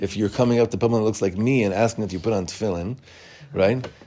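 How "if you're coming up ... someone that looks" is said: plain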